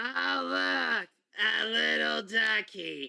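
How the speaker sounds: cutesy, slow, cooing robot voice.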